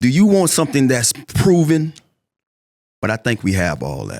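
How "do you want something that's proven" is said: shrill, very high, loud put-on character voice. Giving an elevator pitch to Commander fans: Fred voice. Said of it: "in my Fred voice".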